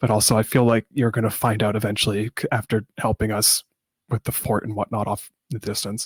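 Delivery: hushed whisper in a character voice. Voicing a character who leans in close to share a secret: whispering in character. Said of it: "whispers in your ear".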